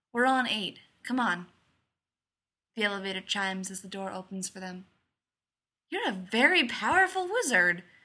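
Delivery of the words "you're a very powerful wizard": raised, openly admiring tone. Narrator reads a child's remark to his father leaving the elevator, in admiration. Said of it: "Jim says in admiration".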